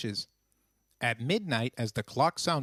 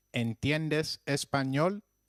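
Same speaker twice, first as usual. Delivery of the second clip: normal talking voice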